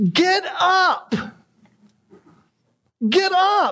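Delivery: very slow, high, drawn-out yell. Discussing laziness, the speaker imagines a man yelling at his kids: retelling a yell at kids. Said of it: "you can almost hear him yelling at his kids".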